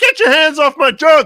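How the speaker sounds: screaming, shrill and very loud. Retelling a movie scene, imitating a man screaming. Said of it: "the guy who's screaming like".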